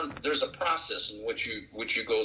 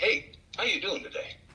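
very high-pitched, cheery, upbeat voice; 10 semitones higher than usual. Retelling a triple amputee soldier greeting from his wheelchair: imitating a soldier's positive attitude. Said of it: "In that kind of an attitude".

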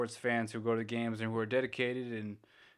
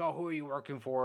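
acted, half-hearted jeering heckling call; 4 semitones higher than usual. Retelling how fans in the audience yelled at the umpire: imitating fans yelling. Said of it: "they were just yelling at him".

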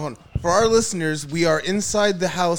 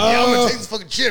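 mocking, put-on cocky tone, higher pitched; 5 semitones higher, 4 dB louder than usual. Retelling how Rich acted before eating the chip: imitating a cocky friend. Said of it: "He was so cocky, just like".

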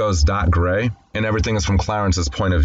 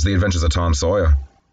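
plain

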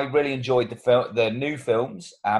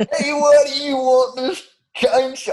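silly, very high, drawn-out put-on Texan accent; 13 semitones higher, 5 dB louder than usual. Co-hosts joking for their listeners, one line in a put-on texan accent. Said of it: "this is really going to alienate all of our American listeners".

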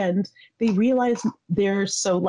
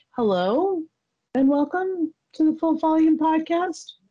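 high, rising questioning lilt. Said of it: "You say that as a question".

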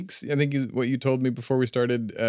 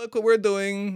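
very high, bad, put-on Russian accent; 9 semitones higher than usual. Speaker trying out accents says this in a bad russian accent. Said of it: "That was a bad Russian accent".

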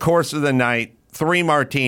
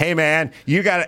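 put-on yelling; 3 semitones higher than usual. Retelling confronting a waiter over a half-full martini: retelling a yell. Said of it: "as I'm yelling".

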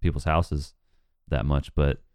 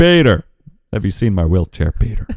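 booming, very loud, animated bellow with swinging pitch; 4 semitones higher, 9 dB louder than usual. Show a listener that you can do impersonations, with an accurate Joe impression. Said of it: "That's actually pretty accurate for Joe".

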